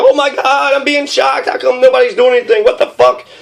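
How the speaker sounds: high, frantic, panicked male screaming. Act out the man being tased while John Kerry keeps speaking, imitating a man screaming. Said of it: "He's screaming like".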